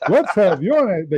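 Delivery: slow, businesslike, put-on professional voice. Showing how they go professional for the pitch: put-on professional voice. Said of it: "I go professional".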